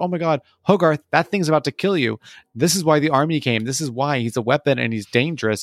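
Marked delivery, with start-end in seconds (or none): 0.0-2.2 mock-panicked outburst, much higher pitch. Retelling a movie plot, voicing a character's reaction: acting out freaking out. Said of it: "Dean's like freaks out".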